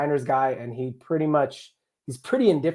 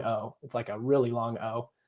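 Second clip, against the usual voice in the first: normal talking voice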